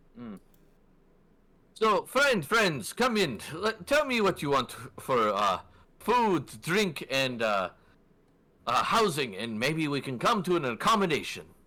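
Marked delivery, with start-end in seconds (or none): 1.7-11.4 put-on Saharan accent, warm welcoming tone. Voicing an innkeeper who greets customers: Saharan accent. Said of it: "Saharan accent to him".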